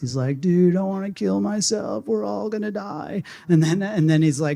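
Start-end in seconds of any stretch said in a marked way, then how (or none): 0.4-3.2 put-on stoner voice, pitched higher and slower. Imitate Woody Harrelson in Kiss the Ground, in a Woody Harrelson stoner voice. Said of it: "in this like stoner voice".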